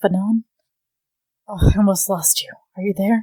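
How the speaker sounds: close, intimate, tender voice. In a role-play, speaking to the injured one as he comes round, really quietly. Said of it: "I think I say really quietly".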